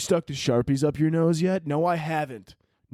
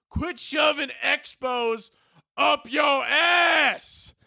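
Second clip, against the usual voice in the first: put-on Southern accent, mock yelling, higher and slower; 12 semitones higher than usual. Imagining a kid's dad yelling at him after school, in a put-on southern accent. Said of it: "I'm trying to do a southern accent".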